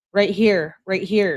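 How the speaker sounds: ordinary delivery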